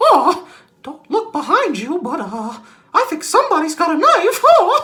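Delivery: very high, loud, squeaky, swooping cartoon voice. Recalling messing with friends by saying freaky things: Mickey Mouse voice. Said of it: "in a Mickey Mouse voice".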